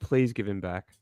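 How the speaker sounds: mock sarcastic begging tone. Acting out america asking russia to return him: sarcastic mock pleading. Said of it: "you can't hear the sarcasm in my voice?".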